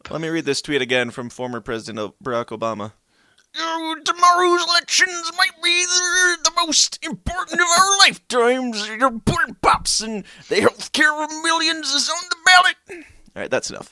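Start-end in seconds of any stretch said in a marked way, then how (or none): 3.5-12.7 very high, loud punchline-style voice. Reading a tweet by Barack Obama aloud: Bill Cosby voice. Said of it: "with the Bill Cosby voice".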